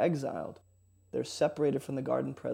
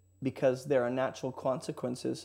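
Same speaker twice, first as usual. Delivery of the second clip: ordinary talk, nothing marked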